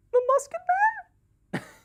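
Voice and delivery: terrified voice, pitch very high. Retelling a game lobby encounter, imitating a player's terrified Gingerbread Man voice. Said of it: "sounded like genuinely terrified".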